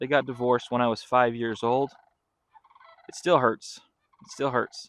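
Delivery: choked up, voice catching, fighting back tears. Telling listeners about family: choked up. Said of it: "Try not to get choked up talking about this too".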